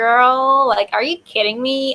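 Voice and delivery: put-on Valley girl accent. Showing how friends from the Valley sound: Valley girl accent. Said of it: "that's exactly how they sound".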